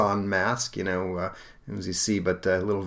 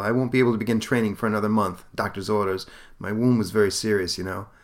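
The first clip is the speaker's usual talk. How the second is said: plain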